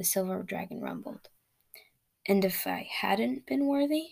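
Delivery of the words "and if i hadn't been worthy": meek, unsure, timid voice with rising pitch. A man questions a dragon after its fire left him untouched, asking timidly. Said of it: "Illyn asked timidly".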